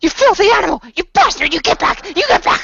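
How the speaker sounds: loud, very high shrieking, hissing creature voice. Storyteller voices a fanged character as his voice turns into shrieks. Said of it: "his voice turns into shrieks".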